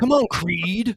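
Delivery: dismissive, contemptuous, scornful jeering tone. Quoting a boxer's line from a movie scene: imitating Mr. T with contempt. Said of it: "he says it with such contempt".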